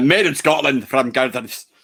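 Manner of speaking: rough, poor, put-on attempt at a Scottish accent. Co-host talking about the can of drink he has, poor Scottish accent. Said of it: "probably poor Scottish accent".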